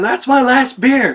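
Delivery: acted-out scream. Retelling how a man screamed at Goose over his beer, retelling a scream. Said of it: "And he's screaming at him".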